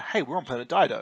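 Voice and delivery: ordinary talk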